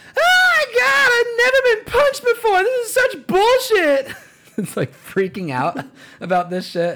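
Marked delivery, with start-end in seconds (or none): 0.2-4.2 very high, loud, panicked shriek. Retelling a male flight attendant's outburst on a plane, retelling a panicked scream. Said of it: "the male flight attendant just screams".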